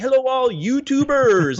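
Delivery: play-acted bubbly, super cheerful, very high, excited voice. Recalling a YouTuber who got the speaker started, imitating New York Stilo's jovial greeting. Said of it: "he was like super jovial and excited".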